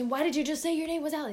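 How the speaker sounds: mock angry shout. Retelling how the coach yelled over a name mix-up, mock yelling, mad. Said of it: "And then he got all mad at me".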